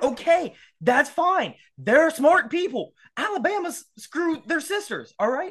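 high, fired-up ranting, let rip. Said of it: "I'm fired up".

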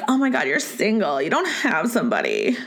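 put-on annoying, swooping Valley Girl accent. Mocking how people once pitied single women, annoying Valley Girl voice. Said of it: "That's my like annoying Valley Girl voice".

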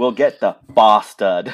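very loud, terrible fake British accent. Speaker mocks a woman's sudden new accent, in Mira's terrible British accent. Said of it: "the worst British accent ever".

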